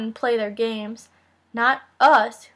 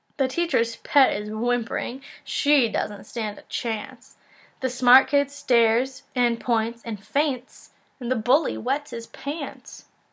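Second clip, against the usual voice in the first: ordinary delivery, nothing marked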